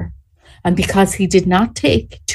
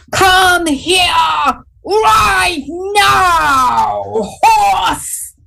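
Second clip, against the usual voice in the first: put-on commanding call, very high, very slow, drawn out; 11 semitones higher than usual. Telling a story, a man calls his horse across a field; imitating a commanding voice. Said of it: "in a commanding voice".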